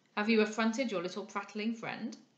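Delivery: ordinary delivery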